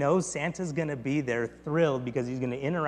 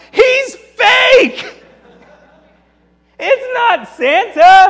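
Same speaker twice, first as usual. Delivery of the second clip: very loud, very high, very slow drawn-out yell; 18 dB louder than usual. Retelling a movie scene where a fake Santa is exposed: imitating a yell. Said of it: "and he yells".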